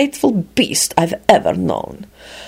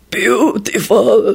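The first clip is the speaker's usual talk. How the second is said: deep, low rattling groan, slower. Narrator reads a goblin speaking to Lupin, deep rattling groan. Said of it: "he groaned suddenly in a deep and rattling voice".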